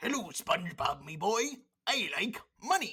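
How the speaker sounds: gruff cartoon crab voice. The speaker shows off an impression they can do: Mister Krabs impression. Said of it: "I do a pretty good, uh, mister Krabs".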